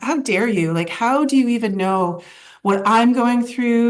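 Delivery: mock words pushed out through tears, crying. Retelling an answer to a gratitude suggestion: retelling own tearful outburst. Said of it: "I remember just crying and going".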